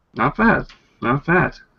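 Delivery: quiet mumbling aside, under breath. A character watches a huge dragonborn sneak up and kill a creature: muttering under his breath. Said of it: "kind of muttering under his breath".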